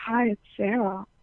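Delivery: sultry, sexy, seductive come-hither voice. Retelling answering her first call, imitating her own sexy voice. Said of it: "my sexiest voice".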